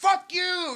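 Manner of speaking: loud yelling, pitched high.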